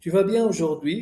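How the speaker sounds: pitch rises at the end on aujourd'hui. Statement said with question intonation, question rise on aujourd'hui. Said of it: "donc je fais l'intonation de question".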